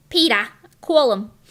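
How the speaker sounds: put-on Jersey accent. Talking about how family on dad's side speaks, try a Lois voice. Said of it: "I could do Lois kind of".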